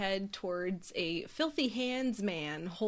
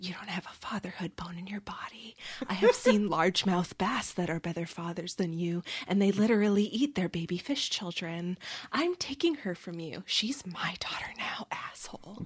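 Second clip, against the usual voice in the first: acted-out put-on whisper. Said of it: "Riddle just continues whispering".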